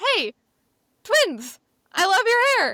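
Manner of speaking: high, loud, gushing voice.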